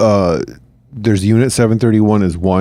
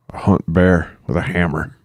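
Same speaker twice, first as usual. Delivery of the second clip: put-on Tennessee accent, lower pitch, quieter; 4 semitones lower, 3 dB quieter than usual. Podcast hosts debate a character's accent; doing an Aldo Raine Tennessee accent. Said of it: "I feel like it's Tennessee".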